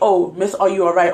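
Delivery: ordinary delivery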